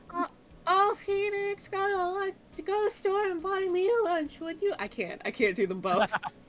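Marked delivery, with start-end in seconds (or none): 0.2-4.8 high voice straining to sound fake low. Asked for Maya's best impression of Mia, do it as Maya doing a Mia impression. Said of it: "me doing a high voice trying to do a low voice".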